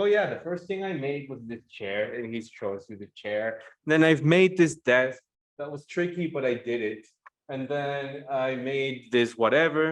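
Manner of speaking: ordinary talk, nothing marked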